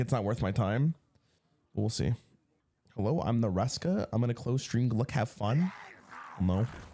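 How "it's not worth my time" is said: ordinary talk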